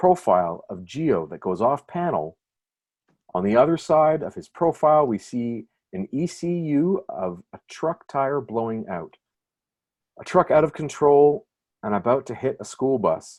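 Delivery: careful, best-effort read-aloud narration voice. Reading a comic script's panel description aloud to the audience: best reading voice. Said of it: "my best reading voice".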